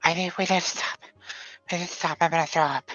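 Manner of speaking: out of breath, winded. Voicing a character who needs to stop running: out of breath. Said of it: "she's out of breath".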